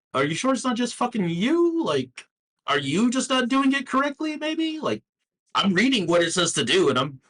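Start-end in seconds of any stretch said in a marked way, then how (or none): 0.2-4.8 very high, put-on sarcastic, mocking, incredulous tone. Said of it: "I'm right here going".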